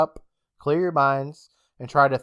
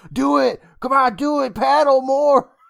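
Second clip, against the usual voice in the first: very high, rough screaming push; 11 semitones higher, 7 dB louder than usual. Speaker retells kids in a boat, one yelling at the rower, imitating Jam screaming. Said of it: "Jam is just screaming at him like".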